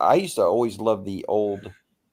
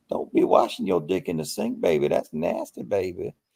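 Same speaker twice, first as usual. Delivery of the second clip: put-on grandmotherly old woman voice, lower; 3 semitones lower than usual. Speaker repeats a funny saying, imitating his grandmother. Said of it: "he was talking like his grandmother".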